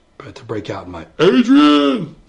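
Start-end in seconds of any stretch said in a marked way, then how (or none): 1.2-2.1 very loud, high-pitched bellowing yell. Apologizing for sounding like your Rocky impression, break out in a Rocky impression. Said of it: "my Rocky impression".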